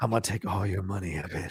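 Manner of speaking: very quiet, barely audible half-whisper. Retelling what someone said to the others: imitating a half-whisper.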